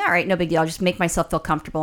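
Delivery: ordinary delivery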